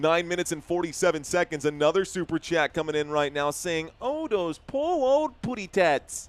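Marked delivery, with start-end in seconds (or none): 4.0-6.3 high, slow, swooping, sing-song cartoon bird voice. Reading a viewer's super chat aloud: Tweety impersonation. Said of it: "Did I do a good Tweety impersonation there?".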